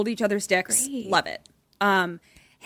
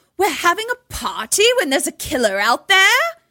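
put-on poor English accent, pitched up; 6 semitones higher, 4 dB louder than usual. Retelling a luau scene line from Putman: Putman's bad English accent. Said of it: "when I imitate it".

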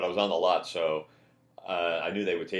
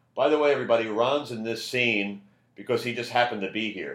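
loud announcing yell, projected to carry; 4 semitones higher, 4 dB louder than usual. Retelling how Saget announced to everyone on set: imitating someone yelling. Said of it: "just yells to everybody".

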